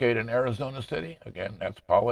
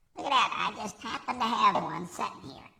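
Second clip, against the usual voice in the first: put-on electronically altered baby voice, higher pitch; 12 semitones higher than usual. Showing off the soundboard's voice changer: soundboard baby voice effect. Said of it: "'cause now I'm a baby".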